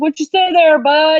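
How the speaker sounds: loud, put-on East Texas accent, buddy-like tone. Retelling how dad answers the phone: imitating dad's East Texas accent. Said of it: "they talk like they're from East Texas".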